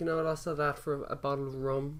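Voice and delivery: ordinary talk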